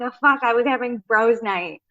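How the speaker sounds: put-on annoyed voice. Retelling what an annoyed friend said on a show: imitating Peter sounding annoyed. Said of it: "he is so annoyed".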